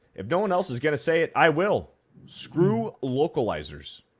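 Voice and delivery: ordinary talk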